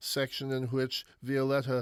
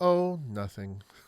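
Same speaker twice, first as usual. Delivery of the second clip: mock placid, calm delivery; 3 dB louder than usual. Retelling how his wife answers when he asks what's wrong, imitating a placid reply. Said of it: "she'll turn to me placidly and say".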